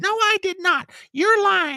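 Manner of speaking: shrill, very high, defensive woman's voice. Speaker mocks a presidential candidate getting defensive when called out, imitating a high-toned defensive voice. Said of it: "she goes right to that octave".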